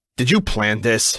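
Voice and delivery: snapped, sharp, barked delivery. Reading a story aloud, accusing the other character in the stuck elevator: barked. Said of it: "I bark".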